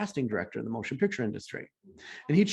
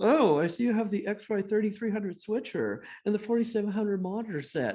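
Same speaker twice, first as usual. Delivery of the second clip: high, nerdy know-it-all voice; 8 semitones higher than usual. Recalling the class nerd Jeff, doing a Jeff impression. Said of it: "this is my best Jeff impression".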